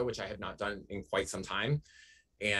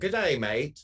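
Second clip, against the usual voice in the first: loud, high Australian-accented delivery; 5 semitones higher, 5 dB louder than usual. Asked to say a greeting in an Australian accent, the speaker uses an Australian accent. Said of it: "Can you say good day, mate, in an Australian accent?".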